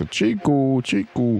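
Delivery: high hawking call like a market vendor.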